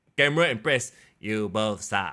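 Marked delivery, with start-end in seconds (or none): 1.2-2.1 robotic text-to-speech voice, lower and quieter. Retelling a phone held up to the camera: Google Translate AI voice. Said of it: "with the, the A I voice".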